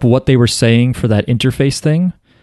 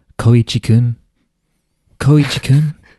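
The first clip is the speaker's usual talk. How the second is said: put-on creepy character voice. Recalling a character creeping around a sign to speak to Koichi, use a really creepy Rohan voice. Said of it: "Really creepy".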